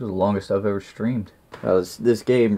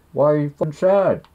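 mouth full, higher and louder; 7 semitones higher, 4 dB louder than usual. Speaker talks while eating, talking with mouth full. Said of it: "I'm talking with my mouth full".

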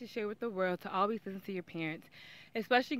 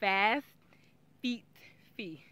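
very slow, deliberate, each word drawn way out; 4 dB louder than usual. Guest repeating an Instagram handle for the interviewer, said slowly. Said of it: "I'm going to say it slow".

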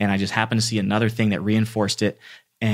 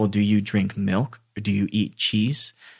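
mock-condescending, patronizing, put-on feminine voice. Retelling a woman with a pamphlet questioning the vegetarian speaker; mock-condescending voice. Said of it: "just like a super condescending voice".

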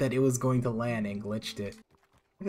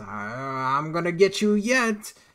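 mock-grumpy, much higher, slower; 5 semitones higher, 5 dB louder than usual. Describing a video game where the squirrel comes back, speaking as him mock-grumpy. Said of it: "he's super grumpy and he says".

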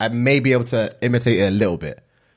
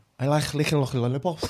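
fake, put-on Scouse Liverpool accent; 3 semitones higher, 5 dB quieter than usual. Saying a set line in an accent game: put-on Liverpool accent. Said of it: "We'll go Liverpool".

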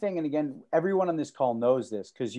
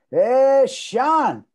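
high, loud, big voice. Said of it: "big voice".

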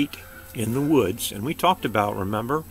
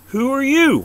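very high, very loud, quivering, trembling voice; 8 dB louder than usual. Narrating a bear confronting a stranger he meets on the path, voice quivering. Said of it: "his voice quivering".

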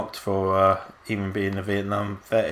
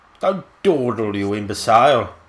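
mocking put-on English accent; 5 dB louder than usual. Playing along with friends, in a mocking English accent. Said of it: "taking a piss out of like English accents".

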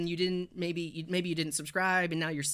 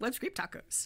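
whispered, breathy, odd vaguely Canadian accent; 4 semitones higher, 6 dB quieter than usual. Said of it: "What is that weird accent you just did?".

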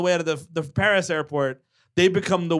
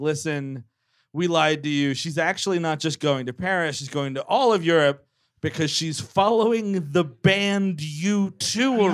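usual speaking voice

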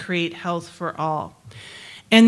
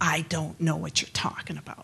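soft, hushed, unvoiced whisper. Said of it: "she goes".

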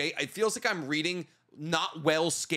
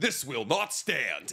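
stilted, dubbed-sounding put-on voice; 4 semitones lower than usual. Mocking an English dub that copies the Japanese cadence: imitating Jinbei's English dub. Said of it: "trying to follow the cadence of the Japanese voice".

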